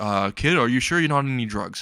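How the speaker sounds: plain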